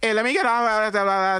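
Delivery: high-pitched Trini patois.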